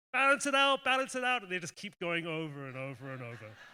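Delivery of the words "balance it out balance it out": very high, loud, frantic scream. Retelling someone screaming as the boat slowly teeters: imitating someone screaming. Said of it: "you hear her screaming, like".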